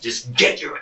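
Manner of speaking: loud, high-pitched, urgent scream. Recounting what they screamed at him while claire was still breathing: retelling a scream. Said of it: "I screamed at him".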